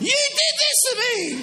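very high, shrieking woman's scream. Doing a stand-up bit about being born, imitating a woman screaming. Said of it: "and she's screaming".

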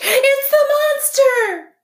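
piercing, shrill, very high screech. A bird flutters up from its branch and screeches at the robot. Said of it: "Swooper fluttered up from his branch and screeched".

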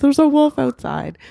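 very high, frantic, freaked-out, alarmed voice. Telling the story, the speaker acts out how they were freaking out back then. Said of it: "And I'm freaking out".

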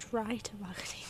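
soft, unvoiced whisper.

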